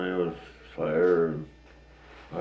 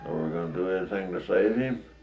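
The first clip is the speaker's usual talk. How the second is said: plain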